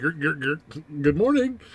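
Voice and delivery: high-pitched stuttering glitch-out at start, then reset. Retelling a moment mid-conversation: Pelosi having a hard reboot. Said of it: "she just kinda went".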